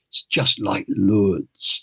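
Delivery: quiet, low, almost mumbled creaky voice. Retelling what Kenny quietly said to the speaker, imitating Kenny's low creaky mumble. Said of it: "who had a very low, kind of creaky voice, almost mumbly voice, he just quietly said".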